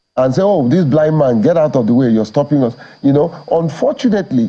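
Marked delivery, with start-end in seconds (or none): none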